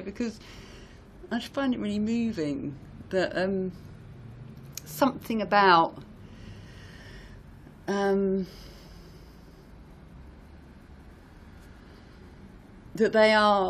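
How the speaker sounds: close to crying, voice choking up. A speaker moved while talking, close to crying. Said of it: "I can hardly say it without wanting to cry".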